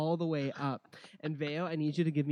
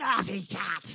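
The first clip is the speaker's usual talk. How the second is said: high scream at the top of his lungs; 7 semitones higher than usual. Voicing a charging gnome: screaming at the top of his lungs. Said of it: "he screams at the top of his lungs".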